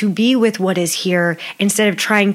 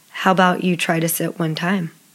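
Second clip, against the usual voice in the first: dry, flat, level deadpan delivery; 3 semitones lower, 3 dB quieter than usual. Retelling what a cousin's husband said to her: imitating a deadpan remark. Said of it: "he just looks at me deadpan".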